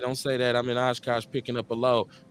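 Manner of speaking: ordinary talk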